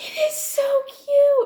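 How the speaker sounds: very high, drawn-out excited squeal. Gushing about the couple in an audiobook: high-pitched excited squeal. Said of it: "that was a little high pitched".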